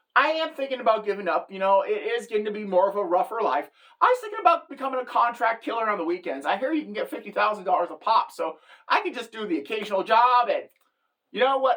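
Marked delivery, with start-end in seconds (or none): none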